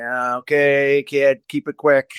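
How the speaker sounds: put-on begrudging tone. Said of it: "Begrudgingly sometimes".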